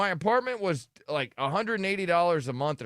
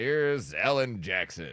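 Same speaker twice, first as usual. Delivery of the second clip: put-on derisive, sarcastic, mocking tone; 8 semitones lower than usual. Retelling reading a name on air: imitating own mocking delivery. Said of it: "It sounds like you're mocking him".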